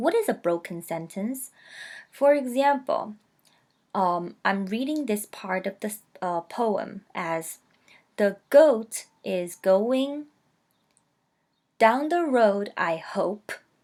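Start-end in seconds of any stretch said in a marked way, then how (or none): 8.2-13.5 brief pause between going and down. Reading a poem line to show broken sentences, pause after going. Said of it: "I am making a pause between going and down. And down the road and I hope they don't connect".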